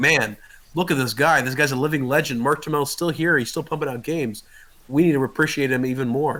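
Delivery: ordinary talk, nothing marked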